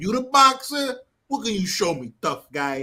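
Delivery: terrible, very bad put-on Italian accent. Retelling what a man said to the boxer, in the worst italian accent ever. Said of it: "worst Italian accent ever".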